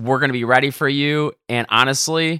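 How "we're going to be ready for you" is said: usual speaking voice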